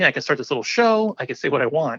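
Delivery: ordinary talk, nothing marked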